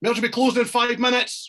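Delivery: very high-pitched shouting. Retelling security's announcement at the merch queue: imitating security shouting. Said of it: "security come out and shout".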